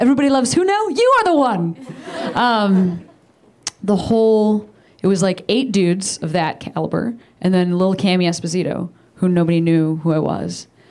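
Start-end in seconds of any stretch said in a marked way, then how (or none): 0.0-1.8 high, gushing, fawning fan voice. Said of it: "this kind of a thing where it was like".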